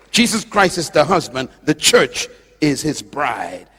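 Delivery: slow, deliberate delivery. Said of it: "let me say it slow".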